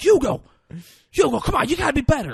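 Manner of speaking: frantic, manic, loud, shrill high-pitched yell. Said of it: "he's manic up there".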